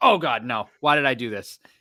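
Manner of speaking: acted-out disgusted tone. Retelling putting shark jerky in her mouth, retelling disgust. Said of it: "I started like almost gagging".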